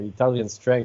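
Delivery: plain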